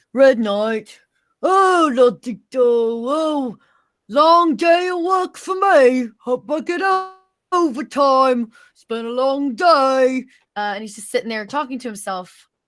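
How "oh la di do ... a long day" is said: very slow, every word drawn out. Voicing the Red Knight talking to himself at camp: Vogon voice. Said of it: "You sound like the Vogon from".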